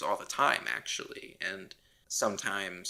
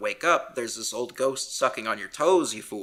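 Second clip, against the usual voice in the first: put-on scream, louder; 5 dB louder than usual. Retelling a movie scene where she screams at him to wake up: imitating someone screaming. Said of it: "she keeps screaming at him".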